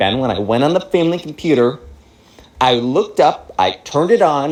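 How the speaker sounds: ordinary delivery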